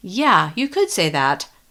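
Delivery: ordinary delivery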